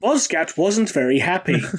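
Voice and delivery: put-on flat, deadpan narrating voice. Speaker retells a line being deadpan translated into English, imitating Toby Longworth's deadpan. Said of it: "just a deadpan delivery".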